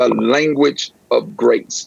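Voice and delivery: slow, deliberate, drawn out word by word. A pastor repeating Dr. Lovett Weems's phrase to his listeners, spoken slowly. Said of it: "I'm going to say that slowly".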